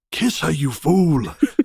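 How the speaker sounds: put-on old wizard voice. Recalling hearing a voice in their head before a kiss, Gandalf voice. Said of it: "in Gandalf's voice in my head".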